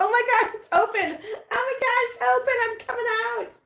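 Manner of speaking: very high, thrilled little kitten squeal. Speaker voices a kitten whose eye has opened, voicing Sardia, excited. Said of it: "She's so excited. She's like".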